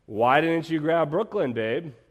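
mock, slow, drawn-out, loud sarcasm. Speaker retells a remark they made to their partner, retelling own sarcastic line. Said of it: "I very sarcastically said".

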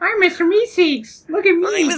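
very high, loud, squeaky cartoon voice. Comparing the group to a cartoon character, doing a Mr. Meeseeks impression. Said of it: "he's trying".

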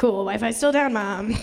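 plain

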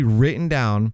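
insistent stress on written down. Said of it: "I'm gonna stress that word".

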